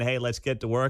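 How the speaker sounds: plain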